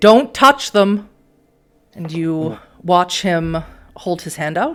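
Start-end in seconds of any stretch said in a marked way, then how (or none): 0.0-1.1 thundering, booming, very loud, full volume. Narrating a tabletop scene and voicing Lamar's command, Lamar's booming voice. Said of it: "you hear Lamar's booming voice say".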